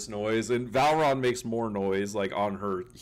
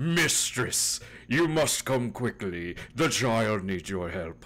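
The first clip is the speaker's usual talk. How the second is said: put-on posh, refined, well-to-do way of speaking. Voicing the familiar Jinx after the players describe him: posh familiar voice.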